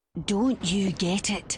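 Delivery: teeth-gritted delivery. Narrator reads a man's line in a story, through gritted teeth. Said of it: "He said through gritted teeth".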